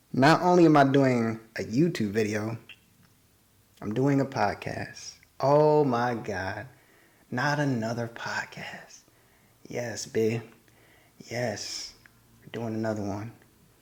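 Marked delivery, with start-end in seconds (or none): 9.7-13.3 soft half-whisper, all breath. Host back doing a podcast again after a while: half-whispering. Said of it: "I don't know why I'm whispering".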